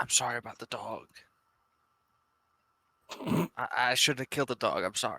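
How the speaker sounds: quiet half-whispered voice. Half-whispering to the scout held in their arms, half-whispering. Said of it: "Can I whisper to the scout".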